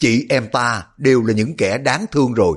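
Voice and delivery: ordinary delivery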